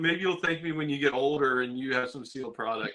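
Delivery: normal talking voice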